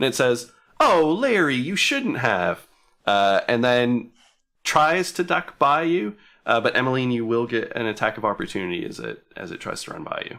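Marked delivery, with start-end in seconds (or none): 0.8-2.7 put-on high, swooping feminine character voice. Speaker voicing a creature's exclamation during a game, in a feminine voice. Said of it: "sort of in a feminine voice".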